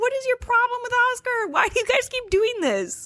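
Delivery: high, angry, demanding complaint. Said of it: "it's so angry".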